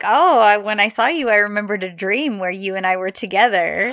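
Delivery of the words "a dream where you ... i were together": normal talking voice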